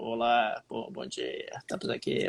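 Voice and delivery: groggy, sleepy, breathy half-whispered voice. Retelling a voice message sent by Tanguy just after waking: imitating Tanguy's sleepy voice. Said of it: "o cara com a voz de sono".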